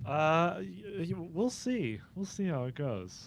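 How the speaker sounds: hesitant, unexcited, very soft and very slow. Asked how he is feeling and whether he is excited, [name] answers unexcited. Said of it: "Didn't sound very excited".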